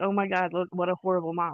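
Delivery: plain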